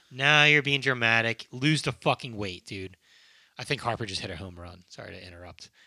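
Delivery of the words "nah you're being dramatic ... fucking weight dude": plain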